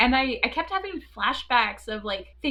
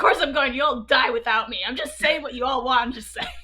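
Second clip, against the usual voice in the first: play-acted irritated, pissed-off anger. Retelling a film scene where a character is told to go on a mission: imitating an angry Bors. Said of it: "pissed off and, like, angry".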